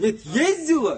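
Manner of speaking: very loud, shrill, high, demanding shout. Questioning another speaker in a heated argument, yelling. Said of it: "Не орите, уважаемый".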